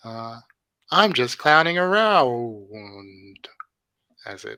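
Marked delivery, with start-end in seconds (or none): 0.0-3.5 crackly 80s tape-recorded robotic doll voice, louder. Game narrator voices a doll as its spirit leaves; cracking robotic tape-recorder voice. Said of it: "cracking robotic, 80s tape recorded voice says".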